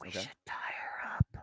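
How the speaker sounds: breathy whisper, under the breath. Speaking in character out in the hallway to the group: whispering. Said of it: "I'm gonna kinda whisper".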